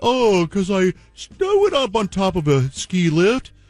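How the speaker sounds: mocking, high-pitched mock voice.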